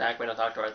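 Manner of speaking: normal talking voice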